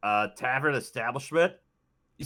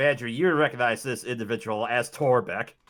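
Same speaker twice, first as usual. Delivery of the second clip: normal talking voice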